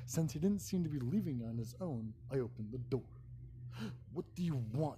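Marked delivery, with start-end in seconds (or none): 4.1-5.0 rude blunt impolite unwelcoming tone. Opening the door to a stranger who won't leave: rude. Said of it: "I said rudely".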